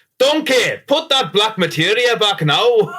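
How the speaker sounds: very high, rough, slow attempt at Scottish accent. Asked on the spot to do one: attempted Scottish accent. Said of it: "Can can you do a Scottish accent?".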